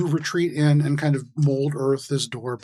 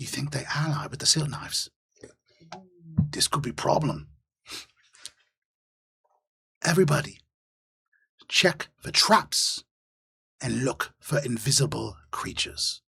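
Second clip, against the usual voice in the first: fantasy goblin creature voice; 4 dB quieter than usual. Narrator voicing another goblin giving orders to its group, in goblin voice. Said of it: "And the other goblin goes".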